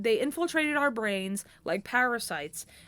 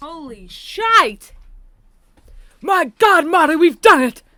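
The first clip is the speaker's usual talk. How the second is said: very loud, high-pitched shouted exclamation; 6 semitones higher, 16 dB louder than usual. On finding the recording has reached 52 minutes, exclaim to Marty in a Doc Brown impression. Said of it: "With the Doc Brown impression".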